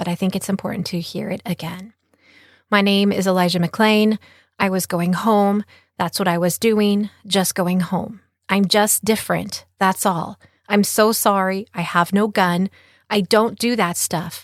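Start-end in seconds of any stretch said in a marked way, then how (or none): none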